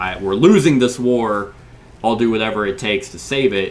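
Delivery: ordinary talk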